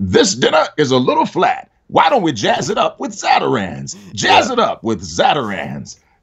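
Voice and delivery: put-on high, swooping cartoon character voice. Speaker shows the voice they've used in cartoons: cartoon character voice. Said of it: "I got to use the voice that I've used in cartoons".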